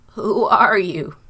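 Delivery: trembling, quavering voice. A son announces the food; his trembling old father asks who he is: shaking voice. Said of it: "in a shaking voice he asked".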